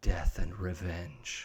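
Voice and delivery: low, hushed half-whisper, barely audible. Narrating a scene, a woman half-whispers to the two listeners standing away from the desk: half-whispering. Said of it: "She whispers to you".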